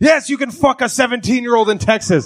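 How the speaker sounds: very high, loud screaming outburst. Imagining a listener at home reacting to the episode: imitating someone screaming. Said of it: "screaming at their phone".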